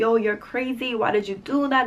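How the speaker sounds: plain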